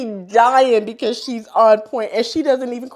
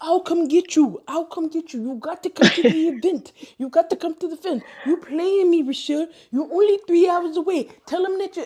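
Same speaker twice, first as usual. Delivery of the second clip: put-on Haitian accent, pitched up; 6 semitones higher than usual. Retelling how a woman insisted he come to the event, Haitian accent. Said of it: "you know her Haitian accent".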